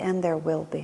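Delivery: very quiet and soft voice.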